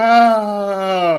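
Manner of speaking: loud, high crash cry. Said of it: "Boom, I hear".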